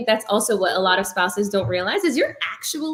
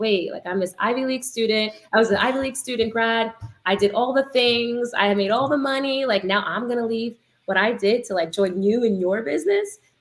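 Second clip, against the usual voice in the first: ordinary talk, nothing marked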